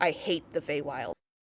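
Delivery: low, grumbled mutter under the breath. Game narrator voices a character's reaction; cursing quietly under breath. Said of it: "you hear him curse quietly under his breath".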